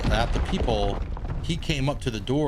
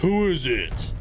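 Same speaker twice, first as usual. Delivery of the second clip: fake mean voice, put on deliberately; 4 semitones higher than usual. Retelling answering a midnight knock at the apartment door, put-on mean voice. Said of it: "let me put on my like mean voice".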